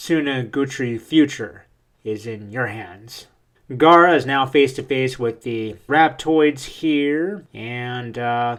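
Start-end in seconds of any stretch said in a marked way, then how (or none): none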